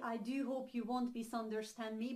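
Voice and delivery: ordinary talk, nothing marked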